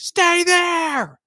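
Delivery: very loud, very high-pitched, shrill holler. Retelling how a dad yelled at his son on the rocks: imitating a dad yelling. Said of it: "dad just, like, yells at him".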